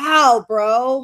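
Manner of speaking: normal talking voice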